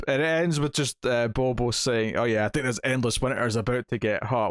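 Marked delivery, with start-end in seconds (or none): none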